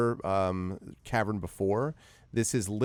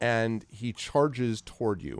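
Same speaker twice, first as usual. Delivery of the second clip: ordinary delivery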